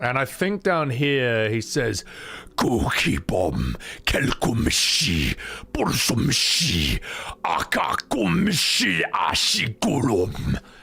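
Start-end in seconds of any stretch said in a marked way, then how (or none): 2.6-10.6 slow, heavy orc voice in invented language. Presenting the Orcish language to an audience, voicing an orc; talking like an orc. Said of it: "gonna need a bit of whiskey to talk like an orc".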